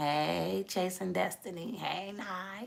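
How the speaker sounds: low, quiet godlike voice. Showing the audience how God talks: God's voice, talking low. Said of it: "What I just did".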